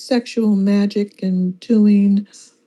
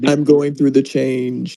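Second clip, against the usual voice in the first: faked deep, low voice; 7 semitones lower than usual. Teased by others about her deep voice, she answers in a fake deep voice. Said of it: "Deep voice [name] is scary".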